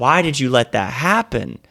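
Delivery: tearful, despairing, anguished scream. Retelling watching an eagle take the owl's baby, retelling a scream. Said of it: "and I'm screaming".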